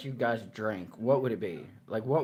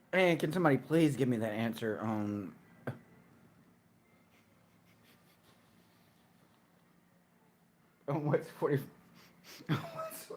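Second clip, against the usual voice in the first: intoxicated-sounding speech; 2 semitones higher than usual. Asking the others a question about the weather, drunk while talking. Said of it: "I'm so drunk".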